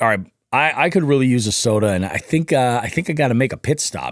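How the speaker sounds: ordinary delivery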